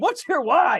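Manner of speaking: high, loud, screaming shout. Explaining why they got on the Peloton, the speaker imitates a lady screaming. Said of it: "some lady scream at me".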